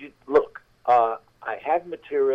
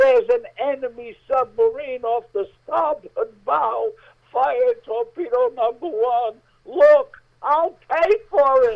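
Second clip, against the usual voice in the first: very high shrieking at full volume; 13 semitones higher, 4 dB louder than usual. Telling a story of a sailor's third order from the crow's nest, retelling a full-volume scream. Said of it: "Now he's screaming at the top of his voice".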